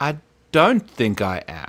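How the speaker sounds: very slow, dazed drawl with drawn-out words. Retelling a heat-stricken man's answer when asked if he was sure, imitating him speaking so slowly. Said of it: "he's like speaking so slowly".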